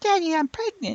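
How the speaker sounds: put-on very high baby voice. Joking about how a pregnancy might be announced: Kato's baby voice. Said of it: "that baby voice that Kato uses".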